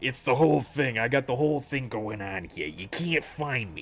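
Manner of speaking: put-on henchman-style accent. Doing a bit that another speaker praises, in a Batman-henchman accent. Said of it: "I like the accent you".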